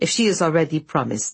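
ordinary delivery

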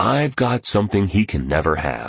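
ordinary delivery

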